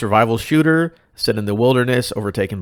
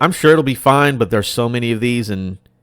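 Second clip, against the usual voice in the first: ordinary talk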